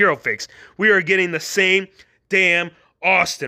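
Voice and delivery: plain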